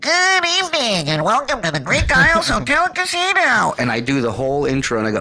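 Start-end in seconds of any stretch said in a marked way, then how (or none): 0.0-3.7 very high, nose-pinched, nasal announcement-style voice. Retelling how he introduced the show offstage every night: pinched-nose voice. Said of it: "I would pinch my nose and go".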